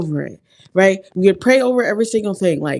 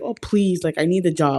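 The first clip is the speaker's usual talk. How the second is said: put-on pleading, begging tone, quieter; 2 semitones lower, 4 dB quieter than usual. Recalling pleading with a manager for a job, the speaker retells own begging. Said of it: "I was begging".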